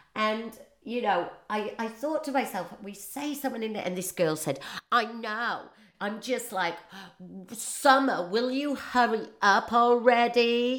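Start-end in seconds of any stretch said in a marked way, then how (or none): 4.9-10.8 slow, casual put-on American accent, words stretched. Quoting a girl complaining about the snow, in an American voice. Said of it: "that's in an American voice".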